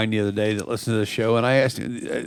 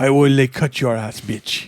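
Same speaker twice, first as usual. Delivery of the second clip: put-on terrible French accent. Voicing cows on a beach telling people off: terrible french accent. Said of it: "terrible, terrible French accent you've got going".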